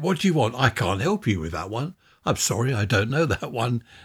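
smart-speaker voice assistant voice. Retelling how Alexa answers when its name is said: imitating Alexa. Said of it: "they all come on and say".

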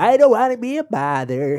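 put-on cartoon old man voice. Asked for another line, doing Old Man Jenkins voice from SpongeBob. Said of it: "What's another thing he says?".

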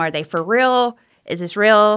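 ordinary talk

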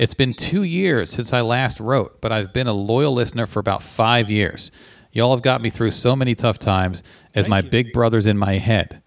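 normal talking voice

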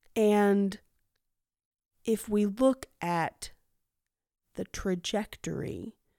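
painfully slow, broken-up, halting lecture voice. Speaker mocking a man from documentaries, imitating very slow speech. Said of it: "He speaks super slow".

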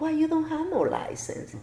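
incredulous tone.

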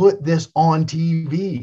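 mock very slow, high, drawn-out, insistent yelling. Retelling how a wrestler yelled at the office: imitating someone yelling. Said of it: "he's yelling at 'em".

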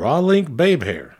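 backwoods country twang. Playing a word-guessing game with friends, repeating the phrase in a hick voice. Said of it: "Say it in a hick voice".

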